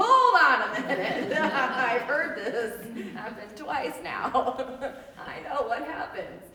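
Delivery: amused, laughing through the words. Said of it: "captain of the guard goes".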